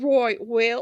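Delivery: poor put-on Cockney accent. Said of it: "That didn't come out like I heard it in my head".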